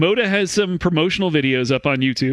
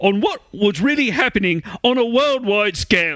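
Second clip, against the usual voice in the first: put-on British voice, higher; 4 semitones higher than usual. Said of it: "why are you making it sound like a, like a, like a prostitute on a British railway?".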